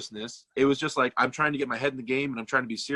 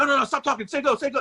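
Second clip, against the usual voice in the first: put-on pushy overtalking voice, higher pitched; 12 semitones higher, 4 dB louder than usual. Retelling how an opponent talked over everyone before the match: imitating Devin talking over everyone. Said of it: "he's trying to over talk everyone".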